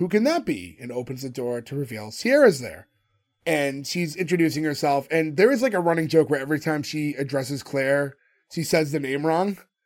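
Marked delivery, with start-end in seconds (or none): 0.0-0.8 put-on stagey, very scripted, read-off-the-page delivery. Recapping a show scene where the doorbell rings, as Jake in a scripted tone. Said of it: "in a very like scripted tone".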